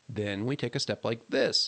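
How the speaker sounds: plain reading voice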